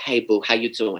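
put-on Bronx accent in a woman's voice. Telling a story about a woman from the Bronx, imitating Margot's Bronx accent. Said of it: "she was from the Bronx, and she'd talk like this".

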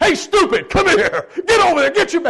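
mock barked army voice, very high and loud, screaming. Retelling how a private first class greeted him off the plane, retelling a scream. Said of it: "And he's screaming at me".

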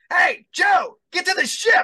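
mock very high, loud yelled voice. Retelling how a game character greeted the son: imitating a game character yelling. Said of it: "they start yelling at my kid in the character".

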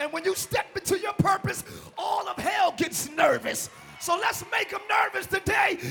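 full-throated, loud, screaming preaching. Speaking to y'all on Pentecost Sunday, screaming. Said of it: "I gotta stop screaming so much".

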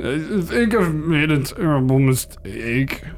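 put-on sloppy, slurring drunk talk. A tearful man drains his flask and stares at his reflection: drunken slur. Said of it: "he slurs".

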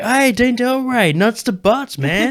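very high, drawn-out Californian dude voice. Quoting what people called out to him, in a Californian dude voice. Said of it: "this Californian dude, he's got that voice".

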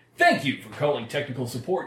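put-on announcer-style voice. Answering a technical support call in a put-on announcer voice. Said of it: "I do with an announcer voice".

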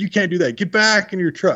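high, put-on scolding yelling. Retelling the lodge owner ordering the speaker back into the truck, imitating someone yelling. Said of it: "she's yelling at me".

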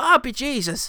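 put-on, playful Irish accent, very high-pitched. Discussing an actor's role, the speaker imitates his put-on Irish accent. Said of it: "he's putting on a sort of Irish accent".

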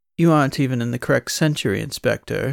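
put-on posh accent.

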